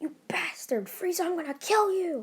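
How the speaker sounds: put-on very high-pitched, enraged, furious shout. Retelling a fan story where a hero yells at a villain: yelling. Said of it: "and yelled".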